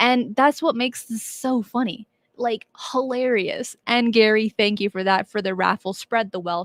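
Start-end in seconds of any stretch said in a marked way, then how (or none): none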